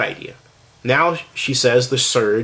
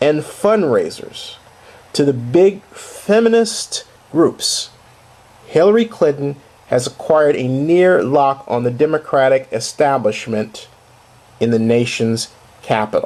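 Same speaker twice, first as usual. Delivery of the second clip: slow, measured, pointed, deliberate reading. Reading a quoted passage aloud to make a point: reading slowly. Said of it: "I read it slowly to make a point".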